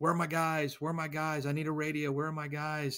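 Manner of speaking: scream held back to a restrained, repeated yell. Retelling a lieutenant inside a vehicle looking for his men: imitating a lieutenant screaming. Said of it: "There's a lieutenant screaming".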